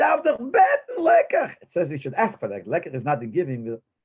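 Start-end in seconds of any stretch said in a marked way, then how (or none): 0.0-1.5 put-on very high, loud, squeaky old man's voice. Retelling how an old man walked over and spoke to the Rebbe, imitating his voice. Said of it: "like in his voice".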